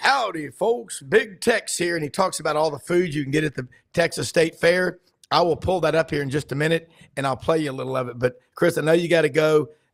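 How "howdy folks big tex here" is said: slow, deliberate, drawn-out announcer voice. Retelling how the voice guy greets folks: Big Tex voice. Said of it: "a guy, uh, that does the voices, and he goes".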